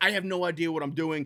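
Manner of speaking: put-on panicking coach voice. Imitating Bill Belichick firing everyone: imitating Bill Belichick panicking. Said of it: "this is just a panic move and he's flailing".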